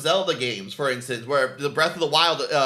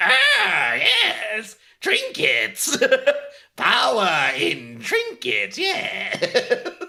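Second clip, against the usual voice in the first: very high-pitched, swooping, birdlike voice; 9 semitones higher than usual. After his voice breaks, the speaker jokes he is turning into an Aarakocra: Aarakocra bird-creature voice. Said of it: "I'm turning into an Aarakocra as we speak".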